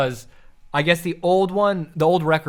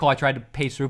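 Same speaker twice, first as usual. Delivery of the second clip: plain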